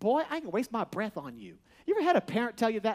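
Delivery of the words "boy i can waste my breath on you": soft, sassy, with a little attitude. Acting out a parent's line from a woman's perspective, with a little put-on attitude. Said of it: "I want to say it with a little attitude".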